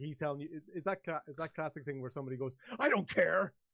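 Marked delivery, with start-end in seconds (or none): 2.8-3.5 higher, louder, really angry voice. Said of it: "they say in a really angry voice".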